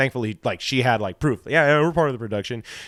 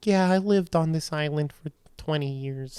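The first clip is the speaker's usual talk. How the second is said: put-on drunk older woman voice, higher, quieter; 4 semitones higher, 5 dB quieter than usual. Speaker retelling meeting a woman on an island: imitating a drunk older woman.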